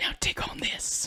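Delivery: quiet, slow whispering.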